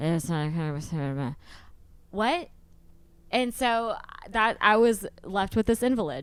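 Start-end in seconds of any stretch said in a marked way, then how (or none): 0.0-2.5 half-formed, swallowed, indistinct mumbling. Retelling what a hard-to-understand person said: imitating Joey mumbling. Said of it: "He mumbles".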